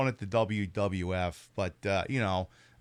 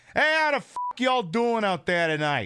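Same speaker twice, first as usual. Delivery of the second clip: very high, loud put-on Jersey mob wife accent; 11 semitones higher, 5 dB louder than usual. Greeting everyone out there tonight in a jersey mob wife voice. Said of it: "and then sound like a Jersey mob wife".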